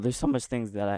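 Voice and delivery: voice breaking and cracking mid-phrase. Showing off a modding tool's features, voice cracking. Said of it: "my voice cracked".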